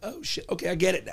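ordinary talk, nothing marked

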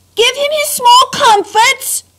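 distant, very high-pitched yell. Reading a story aloud, a voice shouts from the top of the stairs. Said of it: "shouted a voice at the top of the stairs".

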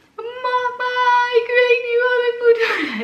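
put-on crying, very high and very loud, sobbing wail. Recalling what she told her mother about the pregnancy; retelling herself crying. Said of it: "Helemaal huilen".

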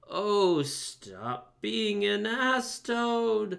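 very slow, high, drawn-out scornful cry. The Mole interrupts the Toad, crying out disparagingly. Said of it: "cried the mole disparagingly".

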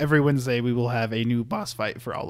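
voice cracking. Host announcing the weekly upload plan to viewers: voice cracking. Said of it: "little voice crack right there".

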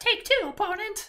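very high, squeaky cartoon voice. Playing Flame King Harbinger against an opponent, the speaker does a Mickey Mouse-like Flame King Harbinger voice. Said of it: "that actually sounds very similar to Mickey Mouse".

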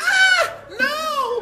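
very high, loud, shrieking scream. Threatened with a beating by another man, screaming 'No!'. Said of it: "Stop screaming like a bitch".

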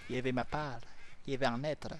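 put-on Spanish accent. Gamer parrots a game character's line, imitating a Spanish accent. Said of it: "cette imitation de l'accent espagnol".

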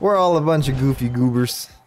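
Canadian accent slipping in. Picking items for a quest, a speaker remarks on the group, slipping into a Canadian accent. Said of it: "I don't know why I sounded Canadian there".

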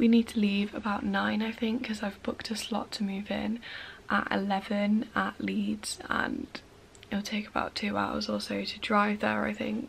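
hushed voice, speaking quietly. Filming early on moving day while family may be asleep: speaking quietly. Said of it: "I'm speaking fairly quietly".

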